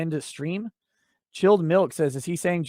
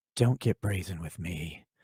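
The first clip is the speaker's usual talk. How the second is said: very low, hushed, murmured ASMR-style judge voice; 9 semitones lower, 5 dB quieter than usual. Reading out a commenter's message in the voice it asks for: Lady Judge ASMR voice. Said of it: "in Lady Judge A S M R voice".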